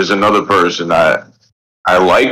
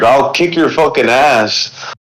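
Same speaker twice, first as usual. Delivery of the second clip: put-on drunk Canadian voice, aggressive, higher pitch; 6 semitones higher than usual. Speaker describes a hyped-up guy, imitating a drunk canadian about to fight a moose. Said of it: "Like a drunk uh, Canadian about to fight a moose".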